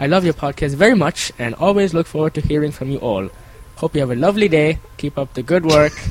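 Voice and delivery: bad, faltering, put-on English accent that slips. Reading a listener's letter to the podcast aloud in a bad english accent. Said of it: "That was not English".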